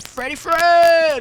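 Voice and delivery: slow, loud hype shout.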